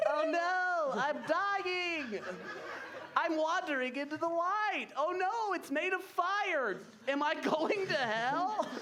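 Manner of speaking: high-pitched, squeaky vintage cartoon character voice. Voicing a claymation character's red nose in an old cartoon nose voice. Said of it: "His old cartoon nose voice goes like".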